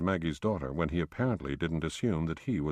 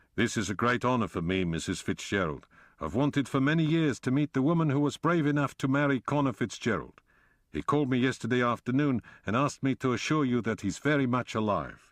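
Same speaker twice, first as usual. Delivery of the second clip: put-on broad South African accent, pitched up; 7 semitones higher, 4 dB louder than usual. Reading a story aloud, voicing a character's greeting: broad South African accent. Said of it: "he said in a broad South African accent".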